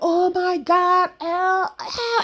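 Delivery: put-on very high, stretched-out, desperate scream. Retelling a scene where Mike screams for Elle: imitating Mike screaming. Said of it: "Mike was screaming".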